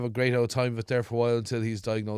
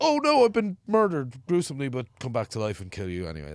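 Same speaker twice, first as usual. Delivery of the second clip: put-on smug tone. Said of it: "It has to be very much like".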